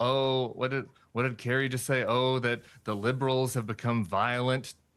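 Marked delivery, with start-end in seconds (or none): none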